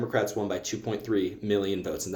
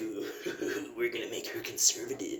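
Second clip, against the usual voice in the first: creepy, hushed whispered leer; 8 dB quieter than usual. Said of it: "he's so creepy about it".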